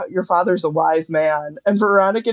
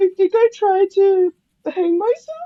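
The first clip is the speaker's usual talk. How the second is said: put-on high-pitched, slow little-kid voice; 12 semitones higher than usual. Retelling a movie scene, imitating Ron saying it like a little kid. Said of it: "he says it like a little kid".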